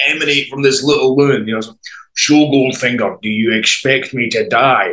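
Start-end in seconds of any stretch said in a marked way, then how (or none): 2.1-4.9 booming put-on Scottish voice, slower. Retelling a nurse in Goldfinger mode, quoting the film: Sean Connery impression. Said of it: "this booming Scottish voice".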